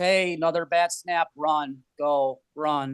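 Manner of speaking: flat, toneless, very slow monotone drone. Clapping at all the kids, flat monotone voice. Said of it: "monotone voice".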